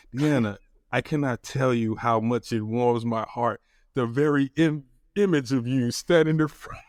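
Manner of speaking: ordinary talk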